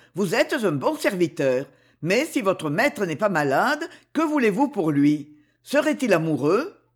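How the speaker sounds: ordinary delivery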